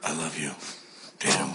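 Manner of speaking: fake seductive voice. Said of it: "you can talk in that voice".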